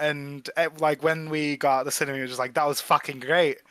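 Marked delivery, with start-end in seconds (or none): 2.5-3.5 shoddy, badly faked put-on Australian accent. Recalling leaving the cinema, imitating David's bad Australian accent. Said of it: "He always does a shit Australian accent".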